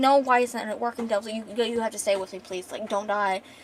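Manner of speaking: ordinary talk, nothing marked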